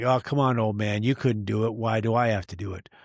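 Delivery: put-on joking, teasing taunt. Retelling a challenge over a missed catch: imitating a joking taunt. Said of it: "he said it in a joking way".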